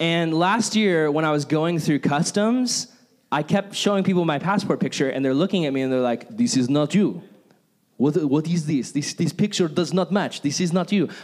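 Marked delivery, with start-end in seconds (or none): 6.4-11.1 put-on Russian accent. Retelling what customs officers said about a passport picture: Russian accent. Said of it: "Why am I doing a Russian accent?".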